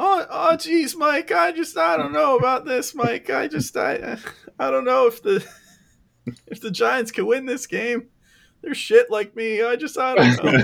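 very high, stumbling cartoon voice. Mocking the other speaker's impression by doing it as Morty: Morty voice. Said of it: "sound like a slightly different version of your Morty".

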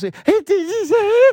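very high, loud put-on squeal.

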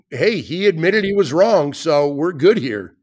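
normal talking voice

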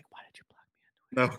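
hushed whisper, spoken very close. Acting out a whispered question to someone who blocked the speaker: acting out a whisper. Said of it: "I just wanted to whisper, whisper in his ear".

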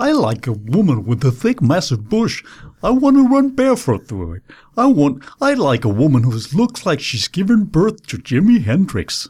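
swooping up-and-down comic patter, lines rising and dipping. Showing how a comedian everyone used to imitate talked, Michael West impression. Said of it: "Han havde sådan en meget karakteristisk talemøn".

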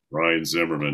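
flat, dead-level monotone stadium announcer voice. Announcing one of the other team's batters, in a flat monotone. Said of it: "so I could kind of give it that monotone".

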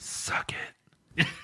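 breathy, really quiet whisper. Showing how to order from the waiter who leans in: said really quietly. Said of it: "Like, really quietly".

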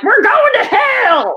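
very high shrill preacher-style scream, "hell" drawn out. Retelling how a masked missionary screams at people: imitating Warrenecki screaming. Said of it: "screams at people".

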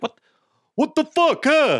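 put-on clumsy Italian accent, very high pitch. Imitating how Italians talk: bad Italian accent. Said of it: "All the Italians are like".

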